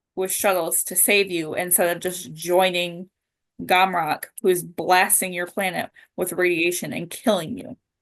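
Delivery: ordinary delivery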